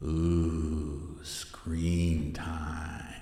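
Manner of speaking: spooky voice with a long, drawn-out ooh. Podcast host introducing the topic of teens and screen time: spooky scary voice. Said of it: "why did I use that scary voice?".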